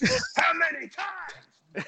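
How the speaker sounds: raspy impression voice. Impersonating a wrestler bragging about his marriage: raspy impersonation voice. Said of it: "that's a great impersonation".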